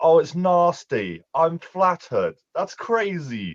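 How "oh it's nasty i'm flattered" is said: mock English accent, higher. Imitating the other speaker's words: imitating an English accent. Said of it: "I've never heard someone with this ac-, you're like".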